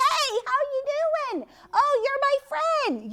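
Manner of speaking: loud, high, carrying, friendly voice. Showing children how friends can greet each other: talking loud to a friend. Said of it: "You can talk loud to each other".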